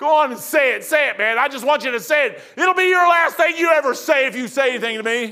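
barking, taunting, in-your-face drill sergeant yelling. Recalling drill instructors who ran right beside you, retelling a drill instructor's yelling. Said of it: "yelling at you".

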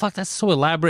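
ordinary talk, nothing marked

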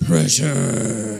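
emphatic, punchy delivery. Showing the group how to say the word: more emphatic. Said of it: "with a little more".

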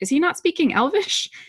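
confused, baffled, very high pitch. Reading a scene among the Hobbits, speaking as Pippin, confused.

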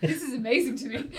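ordinary talk

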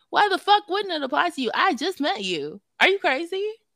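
shrill, outraged, furious yell, high and loud. Recounting going off on a guy they had just met, retelling getting mad. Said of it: "And I got mad".

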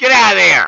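shouting. Scolding the dog mid-stream, yelling at the dog. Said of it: "Had to yell at the dog".

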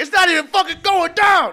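mock, freaked-out, very high-pitched whiny screaming. Retelling a story about a man flushing a toilet, retelling a scream. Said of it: "He's screaming about it".

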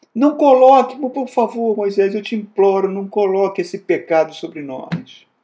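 very high, loud, imploring begging cry. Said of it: "Ele roga".

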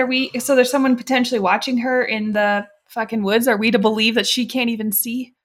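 ordinary delivery

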